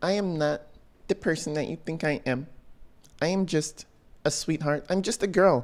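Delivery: mocking, cutesy, babyish little put-on baby voice. Mocking how a woman on trial speaks: mocking baby voice. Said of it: "I like how she does that little baby voice".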